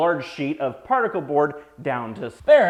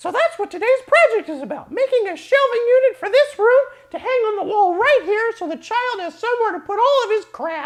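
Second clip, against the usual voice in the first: cartoon mouse voice, higher; 4 dB louder than usual. Explaining the day's shelving project to viewers, in a cartoon-mouse sounding voice. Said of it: "I sound like Mickey Mouse".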